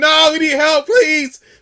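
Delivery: very high, very loud, desperate, panicked screaming. Retelling a childhood moment on thin ice: imitating panicked screaming for help. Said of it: "now screaming".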